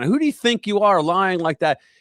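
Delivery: mock heated, confrontational, angry, accusing outburst. Recounting a man confronting the Speaker in a Congress hallway, imitating someone screaming. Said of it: "he would like start screaming".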